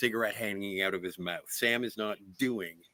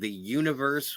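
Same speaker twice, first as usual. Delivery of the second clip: ordinary talk, nothing marked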